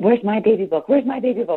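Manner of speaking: frantic, panicky voice, high and loud. Speaker acts out what she suddenly said, imitating panicked asking. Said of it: "Like going in panic".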